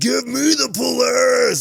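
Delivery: very high, very loud, drawn-out hollering yell. Retelling how a guy in Polaris gear ran up to a lady, imitating him yelling. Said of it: "Like he's yelling".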